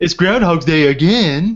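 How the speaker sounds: very slow, every word dragged out. Doing an atrocious Bill Murray impersonation for the others. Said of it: "That's just a mockery".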